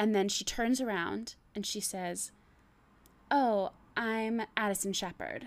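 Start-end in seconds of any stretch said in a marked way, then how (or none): 3.3-5.5 dramatic, swooping, theatrical line reading. Retelling a tv scene, acting out addison's introduction: dramatic reading of a tv scene. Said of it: "my dramatic reading".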